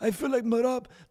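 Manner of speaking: put-on breathless, lisping fighter voice. Getting back to your bit after commenting on it, in an out-of-breath Merab impression with a lisp. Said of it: "he always sound out of breath".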